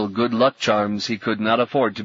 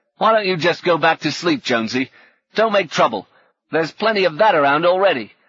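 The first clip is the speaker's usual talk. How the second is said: angry, raised, pitched-up voice; 7 semitones higher, 5 dB louder than usual. A slender man in a trench speaks to another man, angry. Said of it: "more than a little anger in the slender man's voice".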